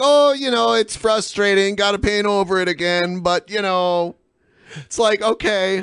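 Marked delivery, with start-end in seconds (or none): 0.0-4.2 courteous, polite Canadian tone. Imitating how polite Canadians complain: imitating a polite Canadian. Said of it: "I like how polite Canadians are. They're like".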